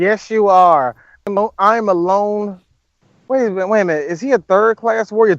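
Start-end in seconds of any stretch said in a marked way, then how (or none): 0.0-2.6 very slow delivery, every word drawn out. Acting out a scene as Bulma replying to Vegeta: Bulma voice. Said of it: "here's Bulma".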